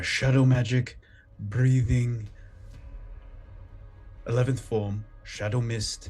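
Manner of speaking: big, booming, resounding, powerful voice. Game master voicing a spellcaster's incantation, in a booming voice. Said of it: "you kind of hear like a, a booming voice".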